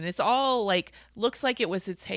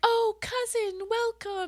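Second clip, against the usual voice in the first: high-pitched, put-on sweet and nice tone; 13 semitones higher than usual. Retelling how Evelina greets her cousin: imitating Evelina being all nice. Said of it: "and is, like, all nice".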